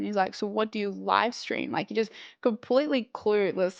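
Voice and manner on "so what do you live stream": imitated patronizing male tone, lower and quieter. Retelling a stranger's clueless questions: imitating a condescending man. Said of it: "the most condescending man I've ever met".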